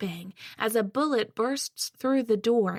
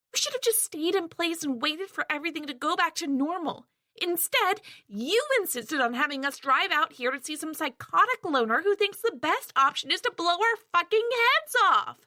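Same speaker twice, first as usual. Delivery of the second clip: high, frantic, panicked rant; 7 semitones higher than usual. A woman rounds on Erickson, who then tells her to calm down; panicked ranting. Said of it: "she replies. / We should have stayed the fuck where we were. / her voice filled with panic".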